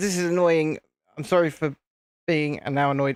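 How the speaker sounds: ordinary delivery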